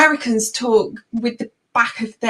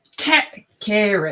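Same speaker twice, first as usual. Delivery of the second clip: "carrot" tried out in an American accent; 2 semitones lower, 5 dB quieter than usual. Trying out a word suggested by the others, in an American accent. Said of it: "I'll try and do it in an American".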